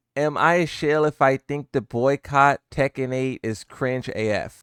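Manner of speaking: ordinary talk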